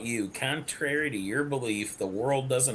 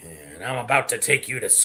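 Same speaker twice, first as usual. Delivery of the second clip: put-on gruff voice, much lower; 3 semitones lower, 4 dB louder than usual. Riffing on a pulled-over man threatening the one who stopped him, imitating a gruff voice. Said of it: "you get all gruff".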